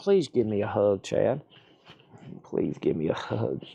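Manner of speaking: begging, pleading puppy voice. Squatting down as the dog begs for a hug: voicing Otis the dog. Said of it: "he's like".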